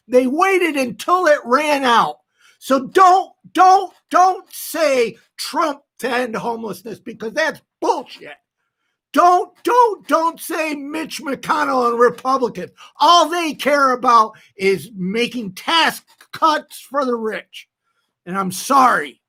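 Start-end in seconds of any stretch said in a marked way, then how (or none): 9.1-17.6 heated, angry, worked-up, fired-up voice. Speaker getting heated while talking. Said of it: "I'm getting heated".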